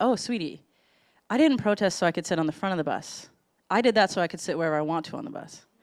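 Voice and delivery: mock very calm, settled, soft voice. Retelling the aunt's answer to her niece: imitating a very calm reply. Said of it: "very calmly".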